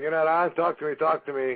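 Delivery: plain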